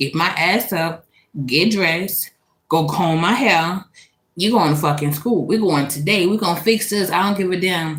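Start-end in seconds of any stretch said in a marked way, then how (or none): none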